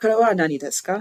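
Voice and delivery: ですか ends on a rising tune. Showing how Japanese questions sound, rise at the end of ですか. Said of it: "Kind of hear like how my song kind of goes up at the end".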